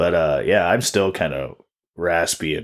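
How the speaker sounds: ordinary talk, nothing marked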